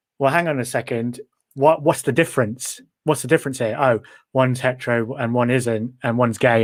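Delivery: normal talking voice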